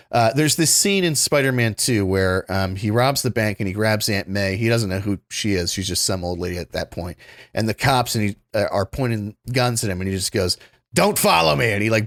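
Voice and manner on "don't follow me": barked out, sharp and loud. Retelling a scene from a film: barking like Alfred Molina. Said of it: "he, like, barks it out".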